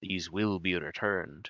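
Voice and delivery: severe, stern, firm librarian-like tone. Voicing a library keeper who looks at the players sternly: stern librarian voice. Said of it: "He looks at you guys sternly and he says".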